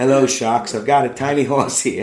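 put-on loud Australian accent, salesman style. Improvising a pitch to tv investors for a tiny horse, australian accent. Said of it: "Why is he Australian?".

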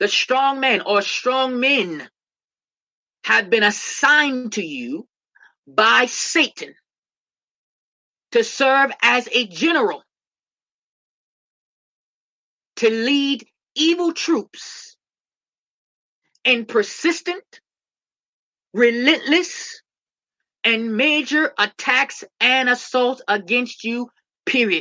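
very slow, deliberate, spelled-out sermon-like delivery. Repeating a warning so listeners understand why it matters: said slowly. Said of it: "I'm going to say it slow".

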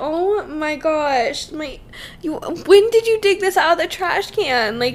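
high, slow shocked disbelief. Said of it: "And I was just like".

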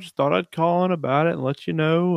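soft-spoken gentleman voice. Retelling how a caller described something in his backyard: imitating a soft-spoken gentleman. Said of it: "talking like a, a s-, a soft gentleman".

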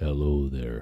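deep, soft, just-woke-up morning voice. Saying hello early in the morning, deep morning voice. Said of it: "I got morning voice, which is my morning deeper voice".

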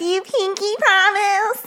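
squeaky, way-up-high woman's voice, very high. Reenacting a phone call from a recorded clip: reenacting Deborah. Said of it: "that was our really good reenactment".

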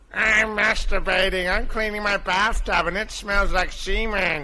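high-pitched animated sitcom cartoon character voice. During a round of cartoon impressions, a participant does a Chris Griffin impression. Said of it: "Chris Griffin".

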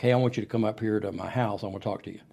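ordinary talk

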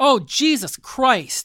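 shrill, very high, loud top-of-lungs shriek. Speaker on the phone at home retells what she yelled, retelling a loud yell. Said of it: "yells at the top of her lungs".

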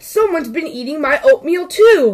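gasping. Narrator reading Mama Bear's line after Papa Bear's, gasped. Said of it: "Mama Bear gasped".

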